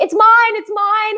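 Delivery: shrieking scream, very high-pitched. Retelling how the egg collector asks whose egg it is, the speaker imitates their own screaming. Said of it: "I start screaming like".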